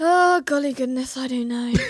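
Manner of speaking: very posh-sounding upper-class delivery. Podcast host answering a co-host's question, sounding very posh. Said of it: "That was very posh".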